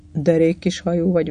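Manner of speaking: usual speaking voice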